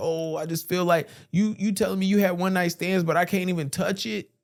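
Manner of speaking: put-on weepy crying. Retelling a man's complaint to his fiancée: imitating someone crying. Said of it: "this was when he started crying".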